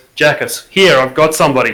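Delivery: booming, resounding, full-voiced loud yell. A player's character calls out telepathically to another character: booming voice. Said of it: "booming voice".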